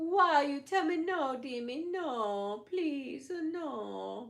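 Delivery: very slow, begging, pleading voice with drawn-out "no". Speaker recalling a favorite scene from The Exorcist: Exorcist mom's-voice impression. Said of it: "starts talking to the priest in the mom's voice".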